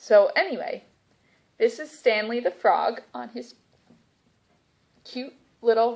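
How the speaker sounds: hiccuping while speaking. Presenting stanley the frog on his lily pad, talking with the hiccups. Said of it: "I've got the hiccups".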